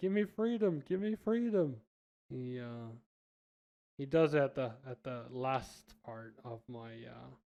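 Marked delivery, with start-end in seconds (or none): 0.0-1.7 high-pitched shouting. Retelling yelling at a friend while health drops: retelling own yell. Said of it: "I'm yelling at my friend".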